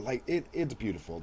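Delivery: normal talking voice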